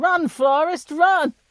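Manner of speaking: loud, high-pitched shout. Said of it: "so I shout out".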